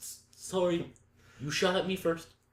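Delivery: put-on Canadian accent, drawn out, slow and high. Joking about being shot at first, in a put-on Canadian accent. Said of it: "I don't know why you're doing an accent".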